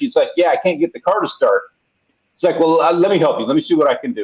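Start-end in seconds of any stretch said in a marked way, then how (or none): 0.4-1.6 put-on learner's broken-English speech. Retelling a stranded driver who couldn't start his car, imitating broken english. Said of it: "in broken English".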